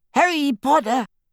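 tiny, high, quivering squeak. Reading the story, the narrator voices the petrified Dobby calling Harry: Dobby's tiny quivering squeak. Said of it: "he squeaked in the tiniest quiver of a voice".

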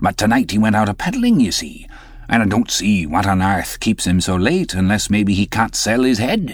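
ordinary delivery

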